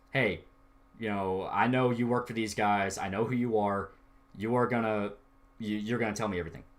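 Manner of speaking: eerily calm tone. Retelling a movie scene with a captive tied to a car: imitating a dead calm threat. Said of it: "dead calm talking to the guy".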